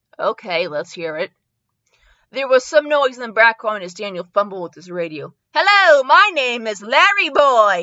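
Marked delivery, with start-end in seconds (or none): 5.5-7.8 shrill, high-pitched shout, very slow and drawn out. Reading a story aloud, a cucumber character speaks: high-pitched shout. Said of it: "a high-pitched voice shouted".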